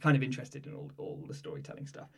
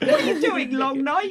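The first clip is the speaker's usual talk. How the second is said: put-on very high, loud, childlike little Cockney boy voice; 8 dB louder than usual. Echoing a character's line from the story, little cockney boy voice. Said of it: "just like a little Cockney boy".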